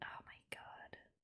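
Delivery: hushed, breathy whisper under the breath. Reacting as a character on screen gets stabbed, whispered.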